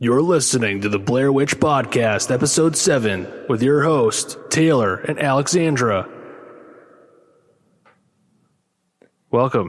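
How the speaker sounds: dramatic movie trailer voiceover announcer delivery. Podcast host opening the episode intro, movie voiceover voice. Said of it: "A movie voice".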